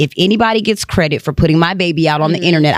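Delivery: ordinary delivery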